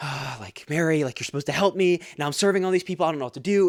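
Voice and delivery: mock angry, upset tone. Retelling the Bible story, the speaker voices Martha, mock-angry. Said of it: "She's getting angry".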